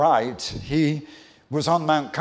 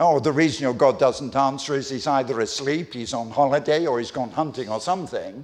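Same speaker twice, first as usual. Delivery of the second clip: usual speaking voice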